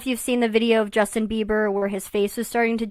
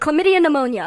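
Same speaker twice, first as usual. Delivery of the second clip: very fast, run together without any pause; 5 semitones higher, 4 dB louder than usual. Speaker retelling a doctor's diagnosis, saying the name very quickly. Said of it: "say it very quickly".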